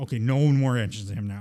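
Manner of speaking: normal talking voice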